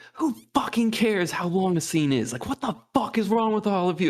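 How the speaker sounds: explosive, furious, profane rant. Retelling a director blowing up at someone on set: imitating David Lynch blowing up. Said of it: "And he just blows up".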